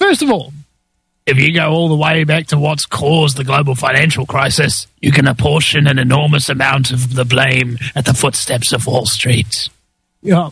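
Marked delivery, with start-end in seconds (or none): 1.2-9.7 deep, low demonic voice. Speaker discussing banking and Wall Street, in a demonic John Key impression. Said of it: "I did that in kind of a demonic voice".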